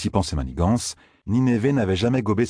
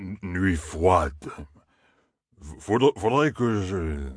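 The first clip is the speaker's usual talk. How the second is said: put-on drunken stammer. A drunk stranger turns and squints at him, with a drunken stammer.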